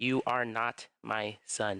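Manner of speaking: very slow delivery, each word spaced apart. Retelling what a man said close to the speaker's ears, words spaced out. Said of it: "Literally spaced out".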